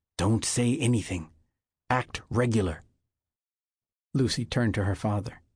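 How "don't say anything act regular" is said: whispered, slower. A man hidden in roadside brush gives a woman orders, whispered. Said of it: "the twigs whispered".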